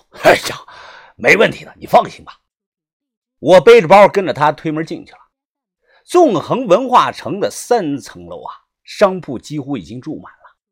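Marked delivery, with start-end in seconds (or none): 0.2-2.4 hearty, chuckling, laughing through the words. Reading a man's reply to his companion's worried question, laughing heartily. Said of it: "哈哈笑道".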